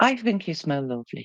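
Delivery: hushed, soft half-whisper under the breath. Voicing a character who leans close to another character: half-whispering. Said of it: "she's kind of whispering to her".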